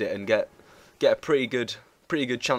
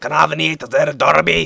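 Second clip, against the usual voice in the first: put-on booming, very loud, thick Scottish accent; 5 semitones higher, 11 dB louder than usual. Imitating what a man asked you, in his strong Scottish accent. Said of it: "really strong Scottish accent".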